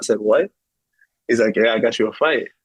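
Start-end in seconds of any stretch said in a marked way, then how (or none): 1.6-2.4 put-on Brazilian accent. Retelling how a man came into the gym with fight news, Brazilian accent impression. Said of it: "you know, the Brazilian accent".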